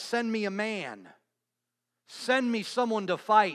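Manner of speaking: mock boastful, defiant, goading taunt. Retelling the Goliath story, Goliath's shouted taunt. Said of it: "So Goliath shouts".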